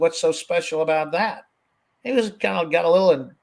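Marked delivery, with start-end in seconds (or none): 0.0-1.4 acted-out, huffy, affronted, indignant tone with attitude. Retelling a doctor's reply on a phone call: imitating an indignant retort. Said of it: "attitude with it and indignant".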